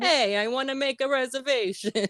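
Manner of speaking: very high, bad, fake New York accent. Retelling how he made a restaurant reservation by phone, terrible New York accent. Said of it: "the worst New York accent I've ever heard".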